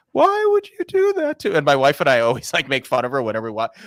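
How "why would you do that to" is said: eerie, creepy, very high psycho voice. Make fun of a psycho character from a show you watch with your wife, imitating a woman's creepy, higher voice. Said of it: "she talks like this".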